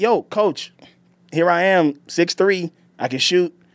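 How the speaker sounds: earnest, keen begging tone. The speaker retells what he used to say to his coach, imitating his younger self. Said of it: "I used to be like".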